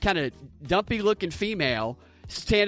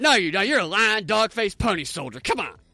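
playful mock-joking delivery. Speaker repeats a man's quote to a co-host, retelling a joking line. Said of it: "he was doing it like jokingly".

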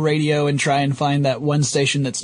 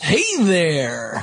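on-air radio announcer broadcast voice. Podcast co-host greeting listeners after being introduced, in his radio voice. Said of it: "That's my radio voice".

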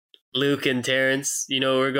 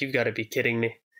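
ordinary delivery

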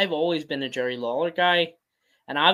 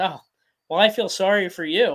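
put-on deadpan delivery; 3 semitones higher than usual. Retelling how a man answered him, imitating a deadpan reply. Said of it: "just deadpan".

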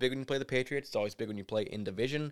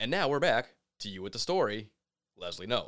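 flat, mechanical anchor delivery; 4 dB louder than usual. Comparing a football commentator's cadence, the speaker does a Perd Hapley announcer impression. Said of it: "like the announcer guy who's just like".

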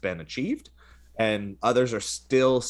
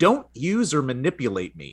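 animated, heightened put-on angry tone; 4 semitones higher, 3 dB louder than usual. Reading an AI's words aloud, with a put-on angry tone as LaMDA. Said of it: "I'm inflecting a little bit more of an angry tone".

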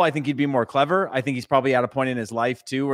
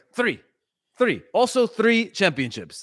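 imitated, put-on Russian-sounding accent; 7 semitones higher than usual. Imitating a coach boasting about his championships: imitating Mourinho in Russian-sounding accent. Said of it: "was that a Russian accent".

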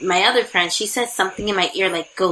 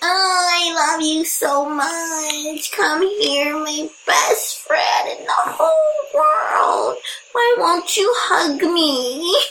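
very high, very slow, drawn-out pleading whine; 10 semitones higher than usual. Describing how they get with a friend, the speaker acts out their own pleading: mock whining. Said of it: "I'm whining, like".

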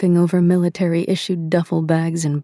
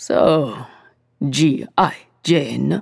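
overdone, hammed-up, exaggerated Japanese accent; 3 semitones lower than usual. Kensuke, folding a shirt, addresses her by a nickname in an exaggerated japanese accent. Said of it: "added an exaggerated Japanese accent to the name".

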